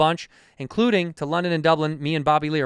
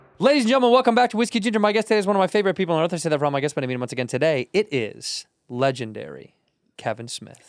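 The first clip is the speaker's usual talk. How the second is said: rolling, auction-house style auctioneer patter. Opening the show and introducing the guest: very fast, auctioneer-like. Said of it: "That was so fast".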